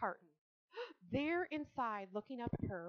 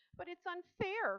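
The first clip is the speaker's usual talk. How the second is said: crying out in high voice; 9 semitones higher than usual. A girl protesting to her father, who holds an axe, crying out. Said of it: "cried Fern".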